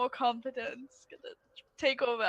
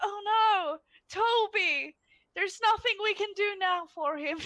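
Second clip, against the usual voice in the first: high, drawn-out, insincere fake dismay; 7 semitones higher than usual. Acting out Asher's response if Toby were about to die: Asher's fake concern. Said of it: "Asher would just be".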